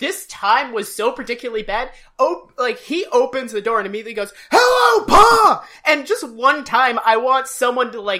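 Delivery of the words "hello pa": very shrill, very high, very loud screamed word. Imitating a child character bursting through a door: imitating Opie screaming. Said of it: "Ron Howard's acting is mostly screaming".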